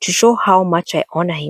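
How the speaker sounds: plain reading voice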